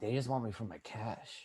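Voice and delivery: small, very quiet raspy voice. Retelling what a man told the speaker during an argument, in a little raspy voice. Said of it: "this is a little raspy voice".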